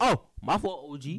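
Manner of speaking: high, very loud scream at full volume. Apologizing for not reading something out, screaming. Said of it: "Why are you screaming".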